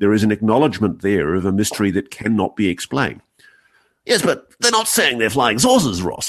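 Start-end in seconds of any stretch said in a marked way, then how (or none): 4.0-6.3 mocking English accent, pitched up. Retelling an English colleague's objection to Ross, in a mocking English accent. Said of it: "take the piss out of my Pommy colleagues".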